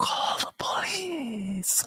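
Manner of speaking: very quiet, hushed whispered walrus voice. Retelling a cartoon scene where a walrus hostage asks for help: imitating a whispering walrus. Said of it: "real quiet".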